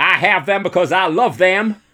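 high, loud put-on Zanesville Ohio accent.

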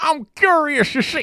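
very high, slow voice, every word drawn out. Retelling a cartoon character's line to friends: Bill Cosby impression. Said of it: "that's a good Bill Cosby impression".

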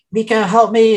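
screamed out in terror, high-pitched cry. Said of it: "they're screaming and she's like".

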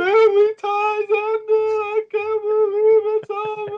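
tearful blubbering, sobbing whine, pitched way up. Retelling finding a man in tears and what he said, imitating Richard crying. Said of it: "he's got tears in his face and he's like".

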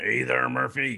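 gravelly, creaking voice. Answering what character was played, quick impression of Phil the bartender. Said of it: "my quick impression of him".

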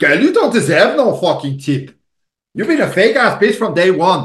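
put-on South African accent. Acting out what others would say to someone, put-on South African accent. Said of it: "I love the way you do that accent".

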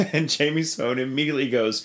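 ordinary delivery

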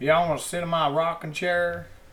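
put-on Texas accent. Showing how he did the accent the very first time: put-on texas accent. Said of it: "the first time I did the accent".

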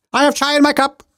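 very high, loud, all-out shouting. Speaker acting out an all-caps message to the audience, yelling. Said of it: "I'm just yelling about what's in my cup".

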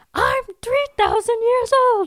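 female demon voice, pitched way up. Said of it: "I'm trying to be a female demon".

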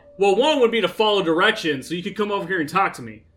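irritated shouting. Answering her question about the trip's requirements, yelling in a very annoyed voice. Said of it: "I yell in a very annoyed voice".

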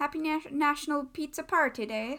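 put-on Irish accent, warm tone. A co-host asked to wish everyone a happy national pizza party day, irish accent. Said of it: "I'm feeling Irish right now".

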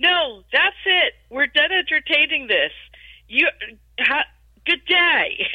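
angry, final, dismissive yell. Speaker retelling a man speaking to their manager, retelling a yell. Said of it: "he starts yelling".

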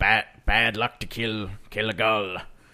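put-on heavy, thick pirate accent. Quoting a line from the film: Willem Dafoe pirate accent. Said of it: "pirate sort of accent".

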